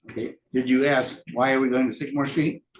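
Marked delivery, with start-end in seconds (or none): none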